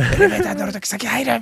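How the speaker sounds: Kansai-dialect angry yelling. Retelling how a strict manners teacher scolded a comedian: imitating a Kansai-dialect yell. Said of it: "関西弁でめちゃくちゃ怒鳴られ続けてる".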